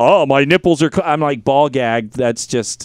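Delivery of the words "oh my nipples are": put-on superhero voice, faster. Retelling a voice tried on someone, low alto She-Ra voice. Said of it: "low alto superhero voice".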